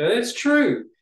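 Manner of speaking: very high, exclamatory pitch lift on "true". Agreeing about exclamation points in manuscripts, pitch rising on it's true. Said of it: "you heard me. I went up on the inflection. I gave an exclamation point in that".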